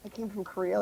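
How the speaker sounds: hushed, near-inaudible, very quiet mumble. Retelling telling a TSA agent about coming from Korea: imitating own mumble. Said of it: "I mumbled it".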